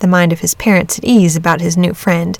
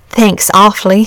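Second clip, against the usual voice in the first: plain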